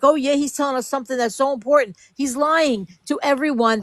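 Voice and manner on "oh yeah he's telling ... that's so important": ordinary talk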